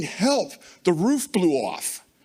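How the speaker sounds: put-on frantic, panicked screaming. Retelling a phone call as a storm tore the roof off: imitating Jamie screaming. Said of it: "he's screaming".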